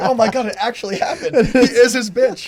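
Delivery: laughing, giggling disbelief.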